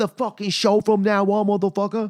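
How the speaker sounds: high, loud, thick mock Boston accent, ranting. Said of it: "why is she talking like this".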